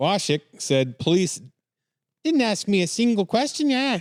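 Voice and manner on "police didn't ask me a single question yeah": failed put-on Canadian accent, pitched higher. Reading a quote aloud, attempting a bad Canadian accent. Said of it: "I can't do Canadian".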